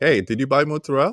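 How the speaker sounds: put-on Italian accent slipping out. Married to an italian, showing how the accent comes out, italian accent. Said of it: "I know it even comes out for me".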